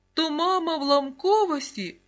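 high, loud, gleeful, joyful exclamation. Serhiyko reacts to what he has just heard, joyful exclamation. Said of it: "Радісно вигукнув Сергійко".

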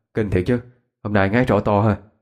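ordinary delivery

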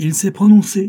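forceful, very high, loud delivery. As revolvers are trained on a captive, a man speaks up in a loud voice. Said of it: "dit Joey d'une voix forte".

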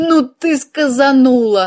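tearful, laughing sob. A cat reacts to the narrator's remark, sobbing with laughter. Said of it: "со слезами на глазах прорыдал кот".

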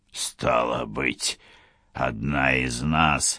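derisive, taunting tone. Weir answers the illusionist Kara, mocking. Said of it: "насмешливо сказал Вейр".

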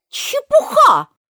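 very high, loud, outspoken outburst. After the queen demands the sentence first, Alice answers, said loudly. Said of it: "сказала громко Алиса".

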